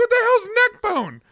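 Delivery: high, loud, disgusted shock.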